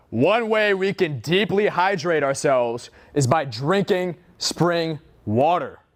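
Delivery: very slow, deliberate, word-by-word delivery. Showing a learner how to deliver the sentence: loud voice. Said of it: "Go loud".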